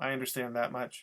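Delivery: ordinary delivery, nothing marked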